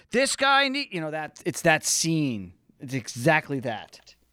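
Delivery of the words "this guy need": put-on high yell. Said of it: "they're, like, yelling".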